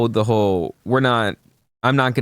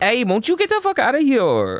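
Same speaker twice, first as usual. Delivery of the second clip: bad fake Puerto Rican accent, very high and swooping; 13 semitones higher than usual. Mocking how Spanish speakers talk, the speaker does a put-on Puerto Rican accent. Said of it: "That's Puerto Rican".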